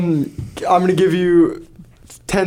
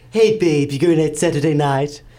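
put-on cartoon baby voice, lower; 3 semitones lower than usual. Doing the quote once more on request as Stewie from Family Guy voice. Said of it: "That was Stewie from Family Guy".

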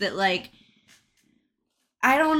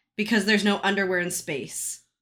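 normal talking voice

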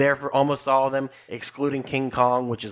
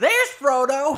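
shrill, high-pitched, loud shriek; 6 dB louder than usual. Recalling a woman reacting when Frodo appears on screen, retelling a scream. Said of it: "She screams".

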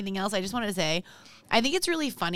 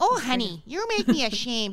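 put-on Minnesota accent. Doing an impression of the speaker's mom, in a minnesota mom accent. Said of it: "I thought that sounded kind of Minnesota".

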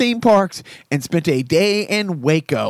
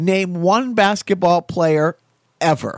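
ordinary delivery

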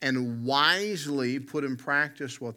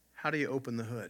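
mock-sheepish, much quieter voice; 6 dB quieter than usual. Retelling how my sister asked our dad at the car: retelling a sheepish question. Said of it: "Then she sheepishly said to my dad".

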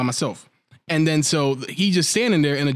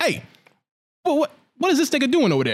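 put-on New York accent, very high and fast; 10 semitones higher than usual. Speaker retells a scene where a princess comes out of nowhere, in a put-on new york accent. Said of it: "York accent".

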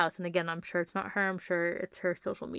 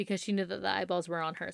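normal talking voice

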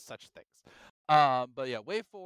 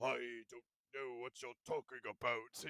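very hushed, soft, parent-style narrator voice; 2 semitones lower, 12 dB quieter than usual. Reviewing a narrated story, imitating the narrator's very parentish reading of a line. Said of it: "it sounds very parentish".

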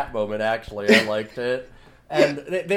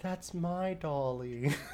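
soft, sad, barely audible put-on little girl voice; 2 semitones higher, 14 dB quieter than usual. Retelling an orphan girl's line to the headmistress: imitating a sad little girl. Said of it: "really sadly".

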